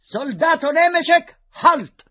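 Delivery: commanding tone, very high pitched and very loud. A second lieutenant orders a galloping soldier to halt: high-pitched commanding voice. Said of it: "con voce acuta e tono di comando ingiunse".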